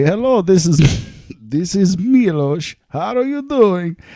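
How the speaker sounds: very high, cheesy, horrible fake Russian accent. Retelling phone calls with a brother, horrible Russian accent. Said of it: "we would talk in horrible Russian accents".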